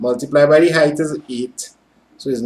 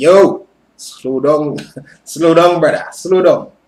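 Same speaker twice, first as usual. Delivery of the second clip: put-on heavy, strong Jamaican accent and dialect; 3 dB louder than usual. Imitating students from Jamaica with strong dialect: strong Jamaican accent. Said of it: "students with strong dialect from Jamaica, like real strong, it's be like".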